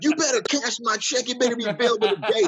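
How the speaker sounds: very high, shouted yelling. Imagining him at a bank job, the speaker imitates a guy yelling at him: retelling a yell. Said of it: "the guy's yelling at him like".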